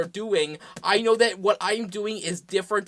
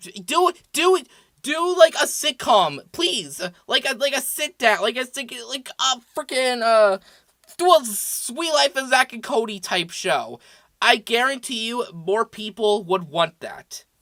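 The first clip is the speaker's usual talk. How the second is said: worked-up, agitated, stumbling rant; 4 semitones higher, 3 dB louder than usual. Ranting about wanting a sitcom-type show instead: worked up. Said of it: "I need to calm down".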